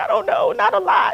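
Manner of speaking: high, loud, tearful sobbing. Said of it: "I called my mom in tears".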